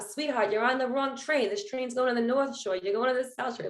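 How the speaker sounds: put-on Long Island accent. Retelling a train ride home, act out what you were told aboard in a put-on Long Island accent. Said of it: "like that Long Island accent".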